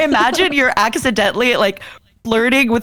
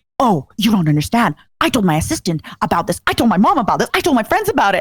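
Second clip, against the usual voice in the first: put-on eager tone. Retelling explaining to the host how many people they had told, acting out explaining. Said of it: "I'm basically explaining to you like".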